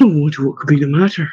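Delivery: plain reading voice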